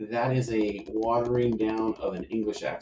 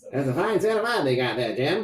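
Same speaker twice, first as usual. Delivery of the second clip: put-on Mid-Atlantic accent, pitched up high; 5 semitones higher, 4 dB louder than usual. Picturing hanging out with someone who always talked that way, Mid-Atlantic accent. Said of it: "mid Atlantic all the time".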